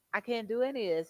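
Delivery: put-on overwhelmed voice breaking into tears. Retelling breaking down about being unable to do the work: retelling a tearful outburst. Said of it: "and I just started crying".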